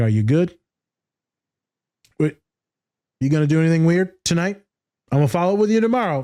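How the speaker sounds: sarcastic, mock-concerned tone. Retelling own words to kids leaving the office: sarcastic retelling. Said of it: "I'm being sarcastic".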